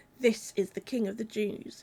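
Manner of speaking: ordinary delivery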